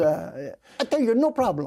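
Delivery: slow, laid-on, put-on Italian shopkeeper accent. Quoting a shop owner, in a put-on Italian accent. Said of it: "I'm trying to do an Italian accent".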